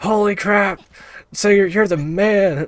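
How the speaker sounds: mock, very high-pitched, drawn-out scream. Retelling how a naked teammate reacted in the washroom: imitating someone screaming. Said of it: "he starts screaming".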